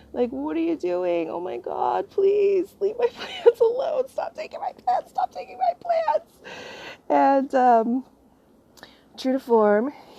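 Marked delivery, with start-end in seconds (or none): 0.3-6.3 very high, fake crocodile-tears crying, tearful and upset. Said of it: "upset, crying".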